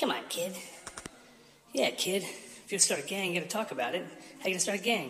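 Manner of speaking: very high, goofy sock puppet character voice. Opening the show with a sock puppet intro, one puppet pressing the Kid, silly sock puppet voice. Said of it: "that was our incredible sock puppet intro".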